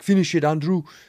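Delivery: weird, mixed-up, put-on German accent. Retelling what a german guy said while passing a joint: imitating his weird accent. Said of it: "the weirdest accent".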